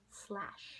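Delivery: soft whisper.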